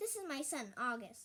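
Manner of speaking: ordinary delivery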